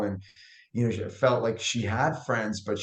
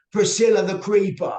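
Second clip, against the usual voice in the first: put-on very high, very loud British accent; 9 semitones higher, 8 dB louder than usual. Speaker recalls blurting out a sauce name out loud, in a british accent. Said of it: "in a British accent of all things".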